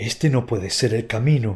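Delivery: hushed, quiet whisper. Frodo, groping in the dark, finds the passage blocked and whispers. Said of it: "susurró Frodo".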